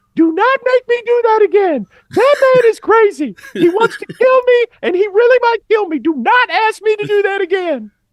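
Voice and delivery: shrill, very high-pitched, very loud yelling. Retelling how a player ran back to his coaches on the sidelines, in a high-pitched Edie voice. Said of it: "he's got this high pitched voice".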